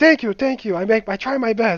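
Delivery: put-on full-on Chinese accent, very high and loud. Retelling the new school chef thanking the students: imitating Henry's Chinese accent. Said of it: "he's like full on Chinese accent".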